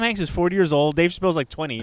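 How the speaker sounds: ordinary talk, nothing marked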